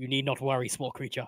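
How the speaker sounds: hushed whisper. Speaking in character to a small creature before everyone shows up: whispering.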